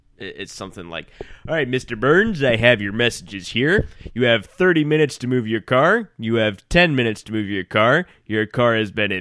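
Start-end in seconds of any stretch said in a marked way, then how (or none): 1.5-9.1 rough attempt at a put-on cartoon character voice. Playing a replacement assistant reading messages to Mr. Burns: Homer voice. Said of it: "I'm going to try and do a Homer voice".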